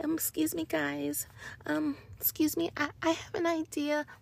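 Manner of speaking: meek, mealy-mouthed voice. Urging listeners to speak up, the speaker demonstrates a mealy-mouthed, mousy voice. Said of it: "mealy mouth and mousy and like".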